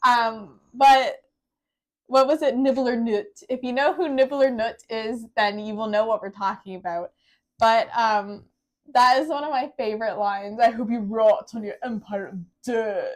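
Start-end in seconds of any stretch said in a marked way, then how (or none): 10.6-13.2 clumsy, bad, fake put-on British accent. Quoting a favorite line from Nibbler Nut, in his bad British accent. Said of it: "he had to do it with the bad British accent".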